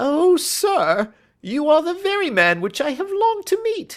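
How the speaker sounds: very high, loud, eager cry climbing high. Narrator reads the little fellow greeting the man he longed to meet: John Robinson's eager cry. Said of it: "Head attendant at the Hotel Cosmopolitan. / we saw a little rat-faced fellow standing in the centre of the circle of yellow light which was thrown by the swinging / "My name is John Robinson," / he as".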